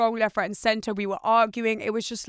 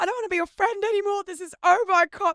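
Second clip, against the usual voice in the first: heated, very high, shrill screaming outburst; 10 semitones higher than usual. Retelling a car argument with a friend, imitating her screaming. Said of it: "She was screaming at me going".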